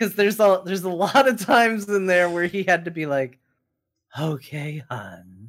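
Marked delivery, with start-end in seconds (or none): 4.2-5.5 put-on woman's voice with heavy, breathy breathing. Speaker mimics how he voiced the women in the book, heavy-breathing lady voice. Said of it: "his heavy breathing lady voice".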